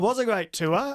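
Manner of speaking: voice lifting upward in pitch. Agreeing about a great tour, pitch going up. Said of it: "You hear the pitch in my voice go up".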